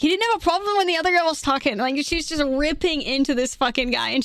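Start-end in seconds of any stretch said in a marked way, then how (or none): 0.0-1.4 put-on girl's Scottish accent, higher. Retelling a gaming clip, quoting a girl: imitating a scottish girl. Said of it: "super Scottish girl".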